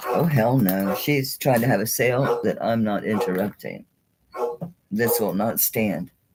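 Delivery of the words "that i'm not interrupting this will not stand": normal talking voice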